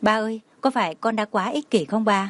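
plain reading voice

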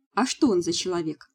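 ordinary delivery, nothing marked

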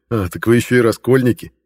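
with a smirk. Narrator answers the girl's remark about the leader; smirking. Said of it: "усмехнулся я".

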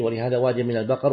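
normal talking voice

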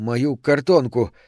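shaky, trembling voice, hurried, rushed words. Narrator reading Harrison's line as he opens the envelope, trembling and fast. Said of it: "дрожащим голосом быстро сказал Гаррисон".

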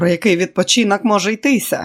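upbeat, cheerful shout. A man answers his tired companion's plea for rest with a cheerful shout. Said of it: "бадьоро прокричав Іво".

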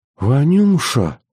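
soft whispering. A grandmother responds to harsh accusations, in a quiet whisper. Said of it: "тихо прошептала бабка".

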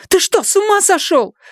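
very high-pitched, shrill, screaming outburst. After her father stamps on her phone, his daughter shouts at him. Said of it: "закричала Люми".

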